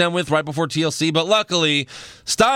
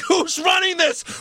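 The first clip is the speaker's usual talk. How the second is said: high mock yell, pitched up. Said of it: "I'm like".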